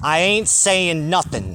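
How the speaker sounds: put-on Staten Island-accented speech. Retell her answer to your questions about the divorce date, imitating a Staten Island accent. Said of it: "she's got a Staten Island accent".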